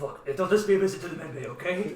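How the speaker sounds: usual speaking voice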